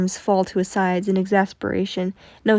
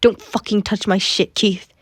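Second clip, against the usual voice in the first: deadly, angry, threatening hiss. Reading a fan story aloud, a character accuses another: hissed. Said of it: "he hissed".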